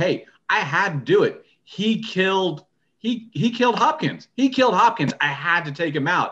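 high, defensive, half-yelled outburst. Retelling a scene where a character yells at two others: imitating a character yelling. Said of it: "he's yelling at Bucky and".

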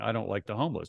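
ordinary talk

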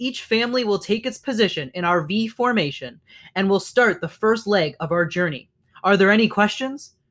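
ordinary delivery

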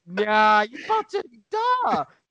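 high-pitched screaming done together in unison. Recounting what the speaker and a friend screamed, retelling the screaming.

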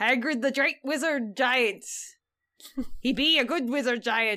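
odd, half-made, put-on pirate accent. Podcast host introducing an episode about Hagrid, in a weird pirate accent. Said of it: "I'm kind of doing a weird pirate accent".

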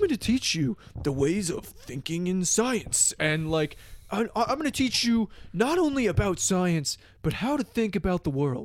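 gravelly, rough-edged lecturer voice. Retelling an online ad for a class: gravelly Neil deGrasse Tyson voice. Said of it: "Neil deGrasse Tyson, ... his, like, gravelly voice".

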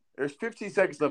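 ordinary delivery

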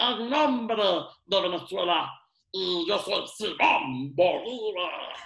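slow, squeaky little dwarf voice. Joking about how Simón Bolívar really sounded, doing Simón Bolívar in a dwarf voice. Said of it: "una voz de enano".

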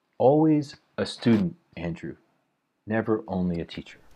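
very slow, patient, deliberate teacher-like delivery. Speaker recalls what a teacher told him, retelling a slow, patient line. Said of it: "he said very slowly and patiently".

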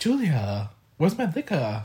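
put-on voice, slow and drawn out. Retelling a TV scene where Matt asks about the liquor: imitating Matt in a kimchi voice. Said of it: "Why did I pull the kimchi voice?".

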